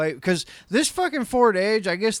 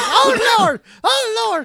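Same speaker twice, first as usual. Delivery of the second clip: very high, drawn-out damsel-in-distress wail; 5 dB louder than usual. Imitating a distraught man in a video, like a damsel in distress. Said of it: "He's like a, a damsel in distress".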